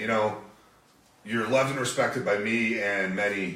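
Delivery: ordinary delivery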